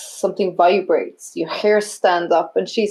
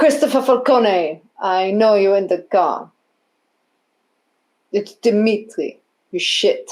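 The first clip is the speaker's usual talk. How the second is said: put-on Russian accent, slower. In a role-played scene, one character confronts another by name, in a Russian accent. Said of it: "Russian accent?".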